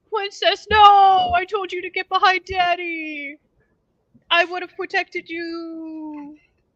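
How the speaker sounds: very high, shrill wolf voice, drawn-out you. Voicing a wolf calling out from the bushes: talking wolf voice. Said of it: "wolf number six from the bushes go".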